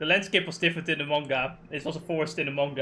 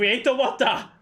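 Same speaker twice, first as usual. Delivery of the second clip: frantic, high-pitched freaking-out scream; 8 semitones higher, 6 dB louder than usual. Retelling an anime scene, quoting Sword Son: imitating Sword Son screaming. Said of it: "freaking out and screaming".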